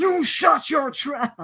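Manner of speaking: furious high drawn-out shout. Retelling how a commentator reacted on air: imitating an angry shout. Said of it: "Ventura gets super mad. He's like".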